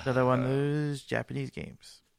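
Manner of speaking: scornful, disdainful, dismissive tone. Announcing a game release on the list, disdainful tone. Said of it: "I can feel the disdain in your voice".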